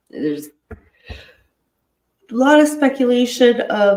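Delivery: talking through a yawn, very slow. Discussing speculation about unreleased body cam footage, yawning while talking. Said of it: "Sorry, I'm yawning".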